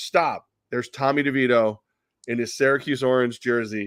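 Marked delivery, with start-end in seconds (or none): none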